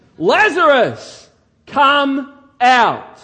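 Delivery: soaring, very high, loud, dramatic cry. Reading the Lazarus story aloud as a dramatic reading, giving the command as a loud dramatic yell. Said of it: "why did he just yell?".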